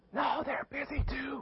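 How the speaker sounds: put-on very high, hushed little-kid whisper. Retelling a child telling a telemarketer his age: imitating a child whispering. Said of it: "little Jimmy keeps whispering".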